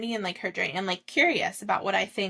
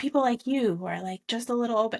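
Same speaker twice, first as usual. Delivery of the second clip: put-on solemn, very sober voice; 3 semitones higher than usual. Retelling a man who talked to the speaker about god, imitating a very sober voice. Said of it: "in this very like sober voice".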